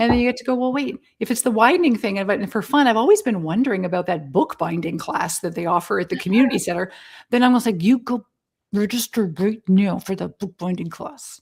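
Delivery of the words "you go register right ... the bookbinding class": mock menacing, insistent, threatening tone. Voicing an imagined push to oneself, mock-threatening. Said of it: "I'm saying it so threateningly".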